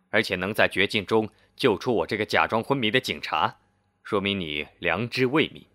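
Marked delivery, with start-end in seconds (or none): none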